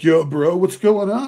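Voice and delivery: put-on surfer dude drawl, high and slow. Retelling a video of a guy in native territory: imitating a surfer dude. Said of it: "the surfer dude".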